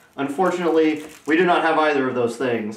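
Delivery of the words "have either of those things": ordinary talk, nothing marked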